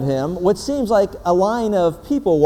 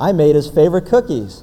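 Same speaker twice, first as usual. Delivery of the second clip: ordinary talk, nothing marked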